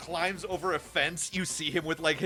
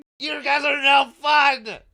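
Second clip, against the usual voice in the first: loud protesting tone, much higher and louder; 10 semitones higher, 10 dB louder than usual. Narrator voices Exon being thrown into the bushes, Exon protesting very loudly. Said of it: "protesting very loudly".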